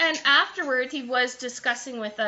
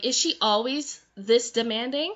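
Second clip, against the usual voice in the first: ordinary delivery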